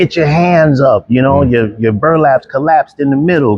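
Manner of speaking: high, screamed loudly. Retelling a dog-bite training drill, imitating someone screaming. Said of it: "I could hear Darnell screaming at me".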